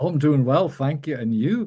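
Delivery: sing-song Liverpool lilt, rising up and up. Demonstrating a liverpool phone exchange, lilting up-and-up liverpool speech. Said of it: "that sort of up lilting up up up speech".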